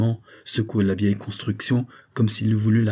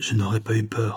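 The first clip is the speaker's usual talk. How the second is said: hushed, low, quiet tone. Narrator reads a man's reply to the teller's mocking question: low voice. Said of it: "répondit-il de sa voix toujours basse".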